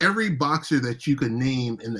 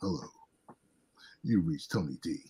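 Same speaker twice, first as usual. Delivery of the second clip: very deep, level monotone, stress on D; 7 semitones lower, 10 dB quieter than usual. Acting out a voicemail greeting in Tony D's deep monotone voice. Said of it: "I hear this monotone voice, so deep".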